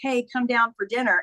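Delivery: ordinary delivery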